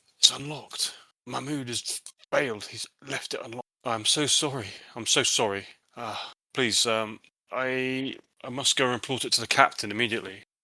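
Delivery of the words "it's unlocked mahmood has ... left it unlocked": mumbled, muttered under the breath. A character finds the window unlocked, muttering under his breath. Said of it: "he mutters under his breath".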